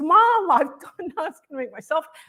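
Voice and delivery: close to tears, voice breaking. Retelling her daughter's words to an audience, choking up, close to tears. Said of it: "and now I'm gonna cry".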